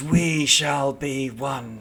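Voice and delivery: very slow, drawn-out hissing cackle. Voicing a shadow creature that mimics a player's voice: cackling, hissing voice. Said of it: "it's cackling with your voice, hissing at you".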